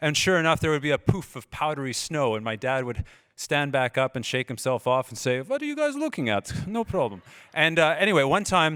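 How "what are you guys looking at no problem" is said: put-on high, swooping, sing-song Russian accent. Retelling what dad said after falling while skiing: russian accent. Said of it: "there comes the Russian accent again".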